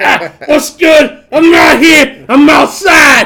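very loud, high, slow, drawn-out New York voice. Doing an impression, trying to get the New York on: Jada impression. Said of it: "I'm gonna do my Jada impression".

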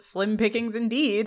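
plain

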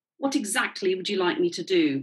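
plain

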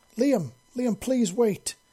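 frantic, high, panicked calling out. Reading a story aloud, a character calls after a leaving soldier: panicked calling out. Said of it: "Slia called in a panicked voice".

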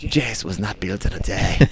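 fake, put-on, bad Scottish accent. Speaker reworks a saying while chatting, in a bad scottish accent. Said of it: "That's a bad accent".

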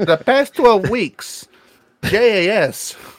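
awful, very slow, put-on Long Island accent. Quoting wrestlers' catchphrase, mocking them: bad put-on Long Island accent. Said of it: "That accent, man, is so bad".

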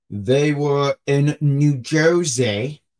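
fake New Jersey accent, heavily laid on. Moving on to wrestling news from AEW, put-on New Jersey accent. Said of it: "That was my New Jersey accent".

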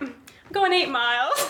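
put-on Australian accent. Retelling own reply to an Australian teammate: imitating an Australian accent. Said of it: "And I'll be like".

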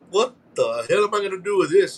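ordinary talk, nothing marked

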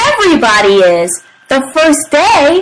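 plain reading voice

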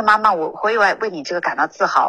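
plain

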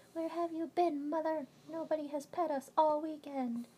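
squeaky, very high, loud talking-cat voice. Woman voices her cats greeting her when she comes home, voicing her cats. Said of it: "they meow like".

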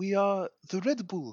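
put-on high, kind-of French accent. Reading out a Twitter user's post, the speaker slips into a kind of French accent. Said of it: "made him sound kind of French there".

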